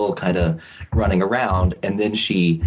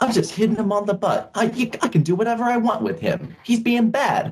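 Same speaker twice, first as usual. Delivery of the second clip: very high-pitched woman's voice; 14 semitones higher than usual.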